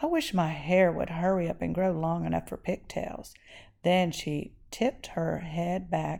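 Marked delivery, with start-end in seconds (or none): none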